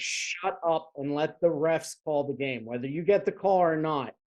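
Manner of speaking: usual speaking voice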